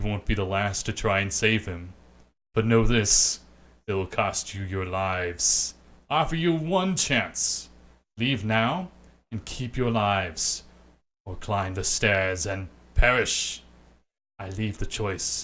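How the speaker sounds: deep, resounding, booming disembodied voice, slow. Narrator voicing an unseen speaker addressing the travelers: deep booming voice. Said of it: "A deep, booming voice breaks your concentration".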